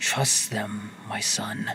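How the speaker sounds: ghostly voice, low and slow. Voicing a voice heard in the wind: voice in the wind. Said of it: "a voice in the wind just go".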